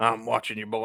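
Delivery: put-on irritated, annoyed old man voice. Playing a neighbor watching from his front porch: old Clint Eastwood voice. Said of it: "when I'm doing this voice, I'm thinking of Clint Eastwood".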